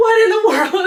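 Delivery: mock very high, very loud, horrified, terrified shriek. Telling friends a story about her baby, the speaker retells her terrified cry. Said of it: "I was terrified".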